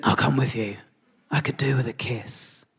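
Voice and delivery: put-on soft, hushed man's voice. Retelling what a man said when you went outside for a cigarette; imitating how he talks. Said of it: "That's how he talks".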